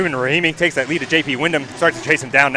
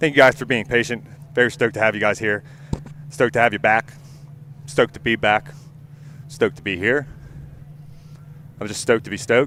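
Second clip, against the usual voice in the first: winded, huffing, panting between phrases; 3 semitones lower, 4 dB quieter than usual. Speaking to the group right after a joke about a heavy phone, out of breath and huffing. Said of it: "I am huffing right now".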